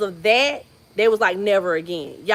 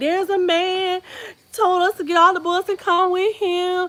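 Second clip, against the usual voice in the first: put-on scared little kid sobbing, very high; 9 semitones higher than usual. Retelling a kid's frightened phone call: imitating a crying scared child. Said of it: "my kid called me and was crying, was scared".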